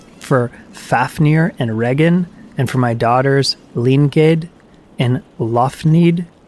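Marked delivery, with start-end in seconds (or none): none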